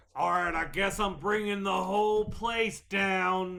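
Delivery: yelling very loudly. Announcing in character before lighting the dynamite: yelling really loudly. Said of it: "I yell out loud, really loudly".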